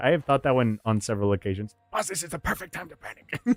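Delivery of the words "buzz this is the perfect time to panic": high-pitched mutter under the breath. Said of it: "talking under his breath and he's talking to".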